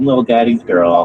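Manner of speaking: mock cute, little girl voice. Mocking a woman online by imitating her: imitating a cute pick-me voice. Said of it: "little cute voice".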